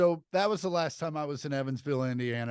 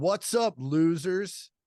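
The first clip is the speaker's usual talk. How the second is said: put-on mad, angry, fed-up tone; 4 semitones higher than usual. Brought up there after losing, the speaker recalls greeting everyone: retelling an angry greeting. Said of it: "And I was so mad".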